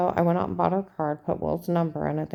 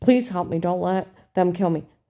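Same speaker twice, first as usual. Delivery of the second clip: imitated desperate pleading tone; 3 dB louder than usual. Retelling pleading with an agent for one's life: imitating own pleading. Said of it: "I'm pleading for my life".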